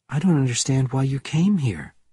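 ordinary delivery

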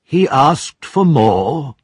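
aghast, disbelieving, horrified, slow and high. Reading a board member's question about the boy: horrified. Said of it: "asked in horror".

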